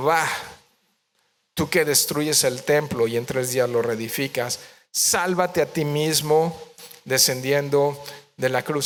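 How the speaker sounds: ordinary talk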